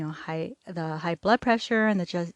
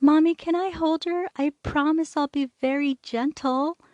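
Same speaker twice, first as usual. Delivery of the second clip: sweet, high, cute, put-on little-girl voice; 8 semitones higher than usual. A mother retelling what her little daughter said, in a cute little girl voice. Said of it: "she said in her cute little voice".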